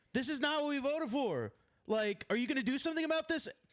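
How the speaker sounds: furious, high, angry yelling. Recounting voters at a town hall yelling at their senator, retelling angry screaming. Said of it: "standing up and screaming at him".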